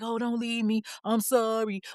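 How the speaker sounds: mock-pleading, put-on begging tone. Retelling how a man begged her not to leave, imitating someone begging. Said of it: "begging her".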